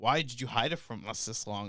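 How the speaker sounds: talking while laughing. Retelling what mom said, imitating her laughing while talking. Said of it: "she's laughing her ass off while saying this".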